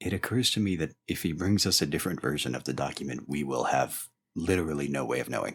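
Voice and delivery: whispered aside. Leaning over to Kato during the scene, whispering. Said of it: "I lean over to Kato and whisper".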